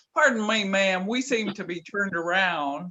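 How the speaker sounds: loud, put-on Texas accent. Retelling how a companion asked a stranger for directions: put-on Texas accent. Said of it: "Dennis would put on his best Texas accent".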